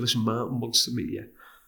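normal talking voice

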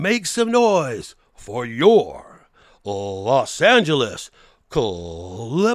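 loudest, gruffest booming arena announcer shout, swooping. Recreating the line he delivered during a timeout, as loud and gruff as possible. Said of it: "as loud as I can, the gruffest voice I can".

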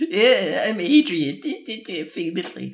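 mocking, very high, dragged-out, slow teasing singsong. Acting out a mocking imitation of someone's verbal tic. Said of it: "He got mockingly annoying?".

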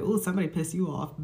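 ordinary talk

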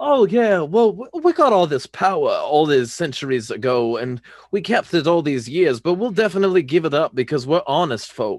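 terrible, hammed-up, put-on old Southern accent. Recalling a rant, the speaker plays a plantation owner in a terrible old Southern accent. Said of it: "my fucking terrible, like old Southern accent and fucking like acting like a plantation owner".

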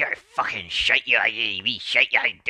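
put-on loud, angry Irish leprechaun voice, little man. Speaker acting out an imagined little leprechaun, in a mock-angry irish leprechaun voice. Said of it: "he talks like this".

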